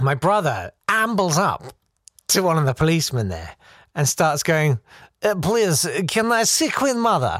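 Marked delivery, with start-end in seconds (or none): 5.2-7.4 put-on comic broken-English Eastern European accent. Retelling a drunk brother asking a policeman, imitating a put-on Eastern Bloc accent. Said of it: "amusing Eastern Bloc kind of accent".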